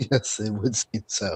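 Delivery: quiet, hushed, low tone. Replying after another character leans over to point out three of them, hushed tone. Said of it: "I say in a hushed tone as well".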